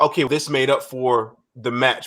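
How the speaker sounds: ordinary delivery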